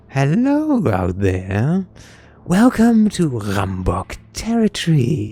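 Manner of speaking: proud, swooping, slow voice projected loudly. A gang leader calls out again to the group before her, brimming with pride. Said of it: "her voice brimming with pride".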